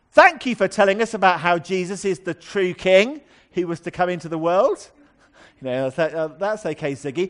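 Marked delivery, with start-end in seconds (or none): 0.2-4.9 needlessly raised, unnecessarily loud, carrying voice. Recounting what a man sitting opposite on the tube said: quoting in an unnecessarily loud voice. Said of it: "in an unnecessarily loud voice".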